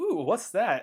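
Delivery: high, curious, distracted crowd voice. Acting out the Deacon enemies being distracted by a skull: voicing the distracted Deacons. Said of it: "all the Deacons are like".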